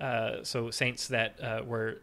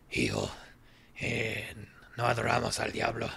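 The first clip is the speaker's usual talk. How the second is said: put-on eerie older woman's voice, in Spanish. Retelling what an older shaman answered: imitating her voice, like Outlast's tall woman. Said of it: "her voice was that, but Spanish".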